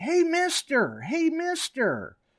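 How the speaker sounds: put-on high, sing-song child voice, hollering over and over. Retelling a little kid calling to the speaker while water hunting, imitating a kid hollering. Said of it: "kept hollering".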